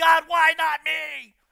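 very loud, slow, high, dragged-out crying. Speaker acts out Christians complaining to God, imitating someone crying. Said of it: "We're crying".

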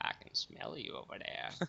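deep, creaky, raspy narrator voice. Answering a request to say the line: Morgan Freeman voice. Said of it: "Morgan Freeman version".

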